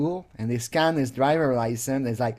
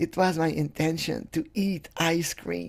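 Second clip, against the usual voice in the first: put-on childish voice, like a small kid; 2 semitones higher, 6 dB quieter than usual. Mocking someone's confession with an invented line: mocking childish way of talking.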